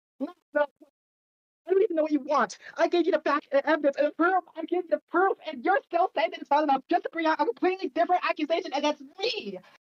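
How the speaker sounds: high, heated, protesting yelling. Arguing back at someone who keeps bringing new accusations; yelling. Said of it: "to stop yelling".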